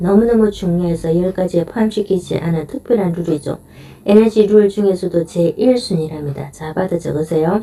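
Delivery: plain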